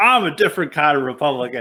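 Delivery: plain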